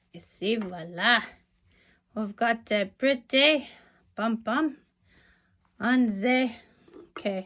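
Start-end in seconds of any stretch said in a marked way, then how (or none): 0.2-6.5 bad, lousy, put-on French accent. Showing off a finished pom-pom, in a lousy fake french accent. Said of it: "that's a lousy French accent".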